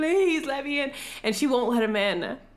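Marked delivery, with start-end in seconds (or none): 0.0-0.9 mock wailing, high, screaming and sobbing tone. Speaker retells a man begging at a woman's door, mock screaming and sobbing. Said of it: "He's like screaming and sobbing and weeping".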